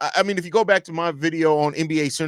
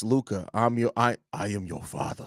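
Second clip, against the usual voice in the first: put-on Australian accent, lower pitch; 6 semitones lower, 7 dB quieter than usual. Before a Bulls game, the speaker addresses someone in an Australian Darth Vader voice. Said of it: "an Australian Darth vo- voice".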